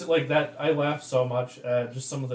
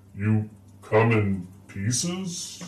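voice with a rumble; 5 semitones lower than usual. Narrating a scene where a voice answers again: rumbling voice. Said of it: "you hear the rumbling voice again say".

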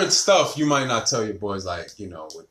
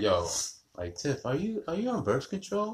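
put-on nonchalant, casual tone, higher and quieter; 6 semitones higher, 9 dB quieter than usual. Retelling how the mother asked about birth control: imitating mother's nonchalant question.

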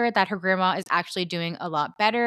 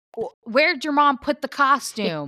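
mad, cross, stumbling delivery, pitched up; 6 semitones higher than usual. Retelling a reality show scene, imitating someone angry. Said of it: "She's so mad".

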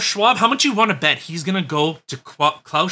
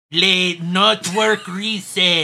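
put-on Mexican accent, very slow; 2 semitones higher than usual. Doing one more accent for a listener, put-on Mexican accent. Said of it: "This is my Mexican one".

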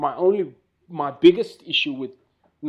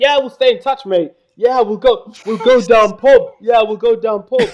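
put-on Yorkshire accent, much higher; 7 semitones higher, 10 dB louder than usual. Asked by the others to do the British thing, Yorkshire accent. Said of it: "That was a fantastic Yorkshire accent".

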